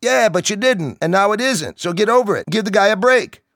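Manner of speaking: very high, loud sharp reply. Someone turns and answers a man complaining to his friend, responding loudly. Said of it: "responded to him loudly".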